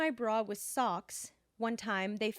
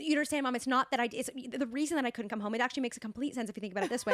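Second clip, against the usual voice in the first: put-on rambling, self-justifying rant full of restarts. Retelling how they argued with Mom while on Adderall, imitating own past ranting. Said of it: "ranting at her".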